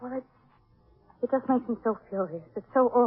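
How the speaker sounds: weeping, tearful, crying through the words. Answering another speaker who asks if she is crying: crying while talking. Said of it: "you crying?".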